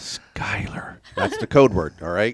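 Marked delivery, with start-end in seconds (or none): 0.0-1.0 hushed, very soft, secretive whisper. Showing listeners how to say the code word: very soft whisper. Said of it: "That's a whisper. In a very soft whisper".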